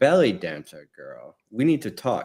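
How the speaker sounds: put-on dramatic film-style delivery in a British accent. Retelling a movie scene, quoting the actress: imitating Rachel Weisz's British accent. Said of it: "Her British accent changes".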